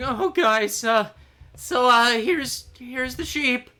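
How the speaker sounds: small, thin, very high, slow voice. Voicing a very small soldier too thin for his armor: small, thin soldier voice. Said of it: "too thin for his armor, uh, soldier ... and he's like".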